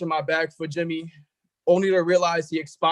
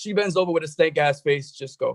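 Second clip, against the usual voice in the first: normal talking voice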